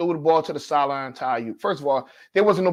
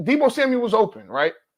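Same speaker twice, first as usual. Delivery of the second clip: ordinary talk, nothing marked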